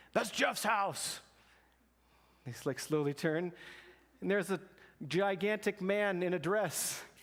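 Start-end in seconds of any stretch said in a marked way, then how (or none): 0.1-1.2 acted, menacing, aggressive, pitched-up delivery. Retelling a man in the street speaking to the couple at the door, booming voice. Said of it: "this like booming voice behind them".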